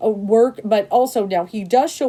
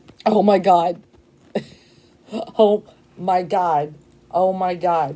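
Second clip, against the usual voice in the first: shaking with emotion, overwhelmed and shaky. Reacting to a tarot card during a reading: shaking with emotion. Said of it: "I'm shaking".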